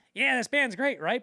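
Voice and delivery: very high, sped-up, rushed shouting squeak. Retelling a movie scene where a guy at a bar yells at the band, sped-up super high-pitched voice. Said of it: "his voice is like sped up, it's super high pitched".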